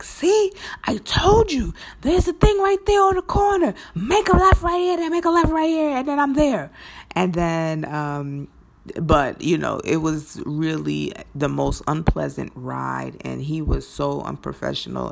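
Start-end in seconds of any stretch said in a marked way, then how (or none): 0.0-6.7 shrill, very high, rushed, rattled-off yell. Retelling yelling directions at him during an unpleasant ride, retelling a yell. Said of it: "I'm yelling at him like".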